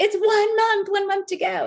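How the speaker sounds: excited, thrilled exclamation.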